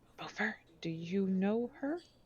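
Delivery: hushed, quiet whisper. Voicing a character who asks Beaufort about a caged woman: whispering in character.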